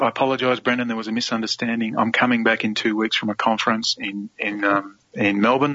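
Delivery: normal talking voice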